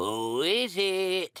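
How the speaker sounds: crackly voice. Reading a fairy tale aloud, the wolf answers a knock: crackly voice. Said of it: "called out in a crackly voice".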